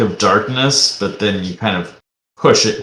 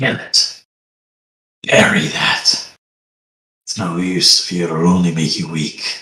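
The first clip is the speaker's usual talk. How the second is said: deep, low voice sounding like an inner voice; 4 semitones lower than usual. Narrating a scene, the speaker voices a voice heard inside one's head, deep. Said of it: "a deep voice".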